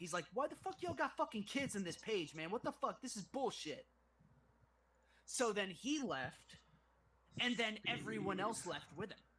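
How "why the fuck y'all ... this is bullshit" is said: mock irate, pissed-off, angry ranting outburst. Retelling a man who got pissed after being told to tone it down, retelling an angry outburst. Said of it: "And he got pissed".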